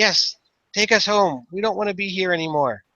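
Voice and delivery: put-on high, happy, eerie childlike cheerfulness, creepy. Voicing a character whose voice sends a chill down the spine: high-pitched, happy, creepy. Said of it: "It seems high pitched and happy".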